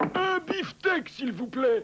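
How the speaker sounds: yelling. Reading a story aloud, a customer asks the butcher for a steak: yelling.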